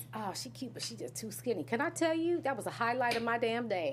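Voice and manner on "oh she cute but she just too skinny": mock mutter, much quieter, faster. Retelling what a man said about her, imitating someone muttering. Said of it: "he says under his breath".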